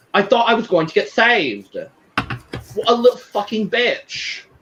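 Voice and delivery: bad, fake, put-on British accent, pitched high. Retelling what someone said after a girls chat, in a bad British accent. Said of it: "My British accent is not good".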